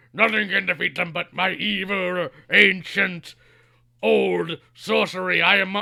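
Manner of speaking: very slow, loud, rough, furious rant. Retelling a villain's monologue as he rages to himself: imitating a character raging. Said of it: "starts raging to himself".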